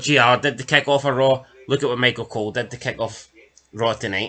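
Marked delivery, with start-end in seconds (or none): none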